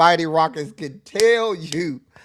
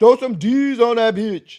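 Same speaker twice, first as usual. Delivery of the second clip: mock loud, hollered, yelled-out delivery; 4 semitones higher than usual. Speaker describes what someone would always yell at you, imitating someone yelling. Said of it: "somebody was gonna be yelling at you".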